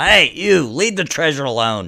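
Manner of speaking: high, very loud shouted scream. Voicing a guard who catches a prisoner moving gems: guard screaming. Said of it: "screams out".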